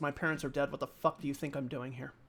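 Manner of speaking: mock speech through gritted, clenched teeth. Speaker acting out what the listener's sister said, retelling through gritted teeth. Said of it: "she kind of says through gritted teeth".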